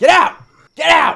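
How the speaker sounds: very high, very loud, ragged, shrill goblin yell. Game master voicing Giblink the goblin, heard from outside, yelling. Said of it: "he's yelling".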